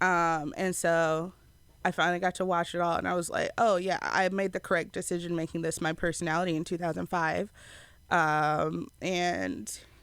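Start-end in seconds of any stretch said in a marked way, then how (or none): none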